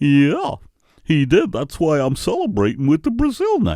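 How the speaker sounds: idiotic-sounding voice. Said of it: "why do you talk like a fucking idiot?".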